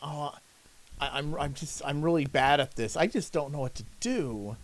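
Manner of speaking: halting, hesitant, sorry-sounding, apologetic stammering. Imitating how someone sounds saying it to an employer: mock-apologetic. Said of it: "you say it in a way that it sounds apologetic".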